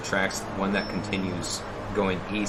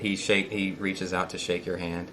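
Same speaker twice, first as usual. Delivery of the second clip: usual speaking voice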